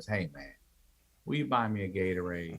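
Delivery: very quiet, soft, gentle, softened-up delivery. Retelling the man's second request: imitating a softened request. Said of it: "then he softened up and he goes".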